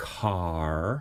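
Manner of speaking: car with a full, drawn-out American final R. Explaining how americans pronounce a final r: american r in car. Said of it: "Americans make the R in the final position following a vowel".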